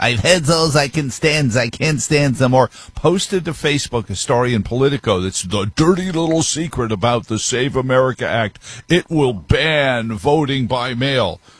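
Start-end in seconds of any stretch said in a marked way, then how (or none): 0.0-2.7 put-on old sailor-man cartoon voice. Quoting what John Cornyn said yesterday, in his best Popeye voice. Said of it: "in his best Popeye voice".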